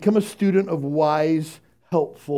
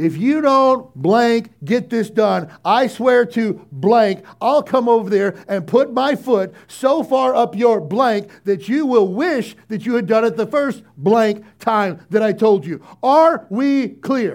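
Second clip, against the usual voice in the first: menacing, loud, high-pitched raised-voice tirade; 6 semitones higher, 6 dB louder than usual. Mocking bosses who motivate people with threats, acting one out: mock-threatening raised voice. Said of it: "raise your voice".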